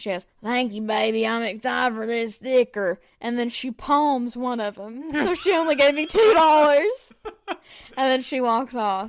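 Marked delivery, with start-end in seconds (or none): 0.4-3.0 put-on classic smoker's voice. Retelling a woman handing over crumpled bills for a sticker, in a classic smoker's voice. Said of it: "classic, like, smoker's voice".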